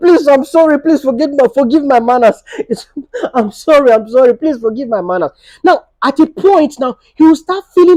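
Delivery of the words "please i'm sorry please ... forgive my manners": fake, repeated, put-on apologetic pleading tone. Showing what to say after laughing at him: acting apologetic. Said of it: "then start apologizing".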